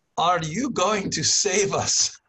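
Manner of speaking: put-on strong Eastern European accent. Quoting a man who asked if he was Dr. Post, in a very Eastern European accent. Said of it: "he has a very Eastern European accent".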